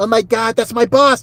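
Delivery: mock nasal woman's voice. Describing a woman with a withering look and her voice: imitating a nasal voice. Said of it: "She's like all nasally".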